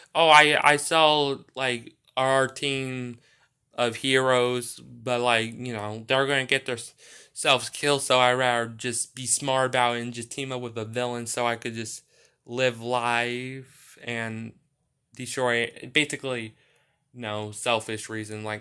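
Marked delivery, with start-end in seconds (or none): none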